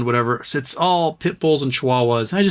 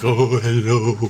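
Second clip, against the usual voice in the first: pet dog's voice, simple; 2 semitones lower than usual. Retelling how a passing dog was greeted: voicing the dog Monkey. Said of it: "and Monkey's like".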